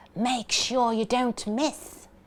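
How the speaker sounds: words spat out in a taunting hiss. Narrating a story, voicing one player's words to another at the goal, hissed. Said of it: "he hissed".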